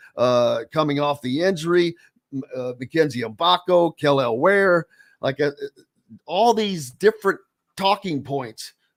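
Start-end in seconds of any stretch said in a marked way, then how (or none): none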